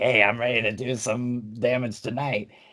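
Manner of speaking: nasally put-on voice, right through the nose. Describing a wrestler who comes out stomping: imitating a nasally voice. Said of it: "in a nasally voice".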